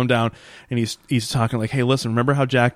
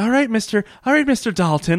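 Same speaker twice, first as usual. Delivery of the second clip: very high, womanly, effeminate voice; 10 semitones higher than usual. Retelling a show scene where a nurse walks in: very effeminate voice. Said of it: "very effeminate voice".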